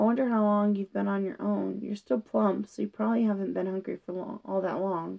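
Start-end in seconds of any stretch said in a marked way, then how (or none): none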